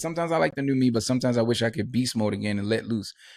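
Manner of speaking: plain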